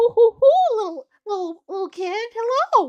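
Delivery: very high, very loud cartoon voice pitched way up. Showing how greeting chat visitors comes out: Mickey Mouse voice. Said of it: "I turn into a Mickey Mouse character".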